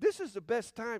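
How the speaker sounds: excited voice, breaking and cracking. Speaker telling the gathered group how good it is to be together, voice cracking with excitement. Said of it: "I'm so excited my voice just cracked".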